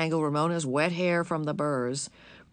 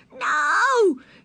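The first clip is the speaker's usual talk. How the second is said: piercing, very high, drawn-out shriek; 7 dB louder than usual. Narrating a story, a girl answers her mother about the scissors, shrieking. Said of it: "She shrieked and stamped her foot".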